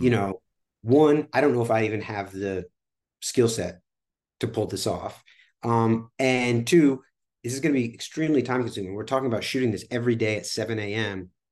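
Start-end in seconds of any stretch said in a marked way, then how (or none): none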